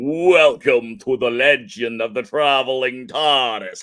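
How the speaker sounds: loud, eerie, ghostly spooky announcer voice. Host welcoming viewers to the legend of the traveling tardis, in a spooky voice. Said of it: "in a less spooky voice".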